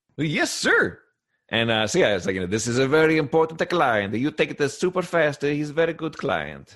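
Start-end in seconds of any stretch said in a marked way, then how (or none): 2.5-6.8 terrible fake Italian accent, higher. Voicing the restaurant boss instructing the new delivery boy, in a terrible put-on Italian accent. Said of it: "I'm doing a terrible racist accent".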